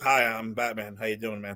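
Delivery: casual, effortless, very low, plain and offhand. Mocking an actor's casual delivery as Batman: imitating George Clooney's plain Batman. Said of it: "he's like".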